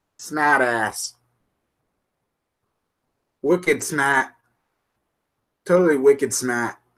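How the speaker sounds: put-on slow, heavy Boston accent with dropped r's.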